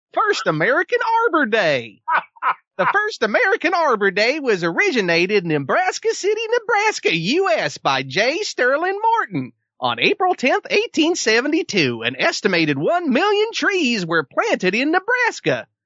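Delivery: very high, swooping, sing-song cartoon voice. Reading their section aloud to the others, in a Mr. DNA voice. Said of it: "using the voice of Mr. DNA from Jurassic Park".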